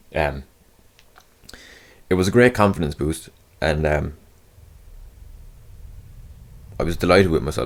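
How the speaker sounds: voice trying not to cry. Telling listeners about being accepted for the next audition round, holding back tears. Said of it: "I'm trying not to cry".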